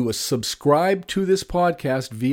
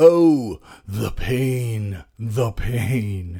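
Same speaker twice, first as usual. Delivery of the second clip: pretty bad, very slow, drawn-out lament; 3 semitones lower than usual. Opening a podcast episode on aches and pains, quoting Dr. Smith: bad Dr. Smith impression. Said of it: "I know that's a pretty bad impression".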